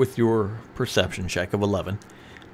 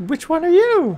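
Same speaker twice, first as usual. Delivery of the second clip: loud, very high put-on creature voice; 7 dB louder than usual. Reading a game character's line aloud in its voice: put-on high voice. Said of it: "I love when [name] tries to do a high voice".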